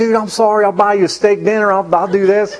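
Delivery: mock tearful voice. Retelling apologizing to a kid just hit: retelling a tearful apology. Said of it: "and I start crying".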